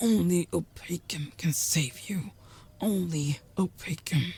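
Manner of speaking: soft, hoarse whispering. Mabok, unable to lift a finger, speaks to you in a hoarse whisper. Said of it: "In a hoarse voice, he whispers".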